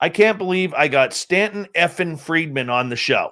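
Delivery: ordinary delivery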